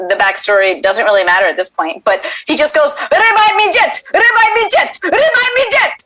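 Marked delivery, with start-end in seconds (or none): 3.1-6.1 play-acted panicked freak-out, very high, frantic, repeated. Retelling a viral Twitch video of a kid playing, imitate the kid freaking out. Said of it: "he's freaking out while he's playing".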